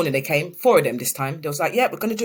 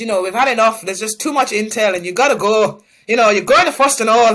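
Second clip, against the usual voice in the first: put-on male Irish accent, louder and faster; 4 semitones higher, 7 dB louder than usual. Retelling how Mister Sloan told her she had to go, in Mister Sloan's Irish accent. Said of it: "with his Irish accent and says".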